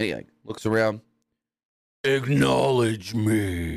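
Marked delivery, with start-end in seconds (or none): 2.0-3.7 deep, low, raspy, menacing voice. Speaker retells Roman taking the microphone, doing a raspy Roman impression. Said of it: "And he's like all raspier".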